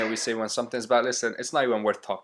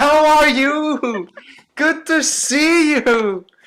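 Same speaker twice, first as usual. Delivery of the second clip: put-on very loud, very high old-man shouting; 9 dB louder than usual. Speaker, after seeing his exported clip, mimicking his own shouting like some grandpa. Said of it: "I'm literally shouting like some grandpa".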